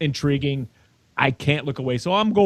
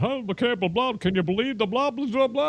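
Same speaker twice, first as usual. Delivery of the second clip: play-acted breezy, offhand, casual, pitched-up nonchalance; 8 semitones higher than usual. Retelling how a coworker spoiled a movie: imitating a nonchalant tone. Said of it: "did the whole nonchalant".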